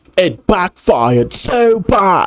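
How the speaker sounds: overemphatic narrator voice, every word leaned on hard. Mocking a video narrator for stressing words too much: imitating overemphatic narration. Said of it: "He putting too much emphasis on shit".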